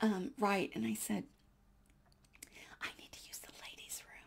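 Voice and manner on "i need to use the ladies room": barely audible, hushed whisper. Retelling asking the woman to the right for the restroom: retelling a whisper. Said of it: "I whispered over the".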